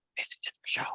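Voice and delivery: soft, breathy, close, whispered aside. A player's character whispers to Olivax; whispering. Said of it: "I'm just gonna whisper to Olivax".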